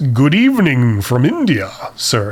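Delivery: slow, grand, drawn-out, swooping put-on voice. Answering Kartik's request, saying good evening in a Vincent Price voice. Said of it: "can I say this in a Vincent Price voice?".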